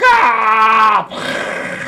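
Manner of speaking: pissed-off, high, loud, angry yell.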